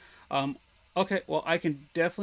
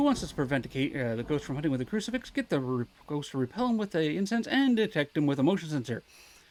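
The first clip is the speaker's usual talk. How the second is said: rushed, rattled off at breakneck speed. Welcoming everybody back, the speaker reads out a request, talking really fast. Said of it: "I'm going to talk really fast right now".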